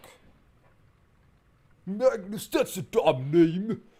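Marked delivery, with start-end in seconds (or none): 1.8-3.8 put-on high, loud, slow, whiny voice like a sulky kid. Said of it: "critique everything that happens on screen".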